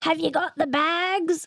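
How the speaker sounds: put-on high Australian accent with bags stretched long. Imitating an Australian overheard at an international airport, Australian accent. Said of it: "why do we sound that way".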